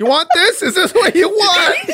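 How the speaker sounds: very high-pitched shriek. Acting out a vlogger screaming into the void: mock screaming into a camera. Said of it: "Just screaming into the void in a camera".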